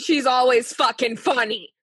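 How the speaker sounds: angry, aggressive, mad-sounding outburst. Talking about a woman who could be funny: angry. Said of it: "That sounded angry".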